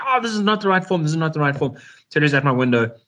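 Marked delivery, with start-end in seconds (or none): 0.0-1.8 high, repeated yelling shout. Retelling a commanding officer shouting at the speaker's window about a form, retelling an officer's shouting. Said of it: "came shouting all the way to my window saying".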